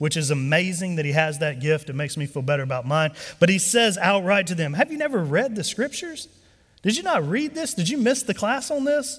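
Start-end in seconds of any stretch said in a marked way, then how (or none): 4.7-9.2 put-on ridiculous, high, mocking, sarcastic taunting voice. Speaker acts out a rebuke from scripture, retelling mocking sarcasm. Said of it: "this is just a ridiculous mocking sarcasm from Jesus".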